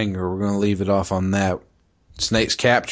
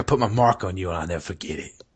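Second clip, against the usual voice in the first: delivered like a movie gangster. Recounting a scene, the speaker quotes what she said, in a gangster voice. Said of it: "Did you say it like that, like a gangster?".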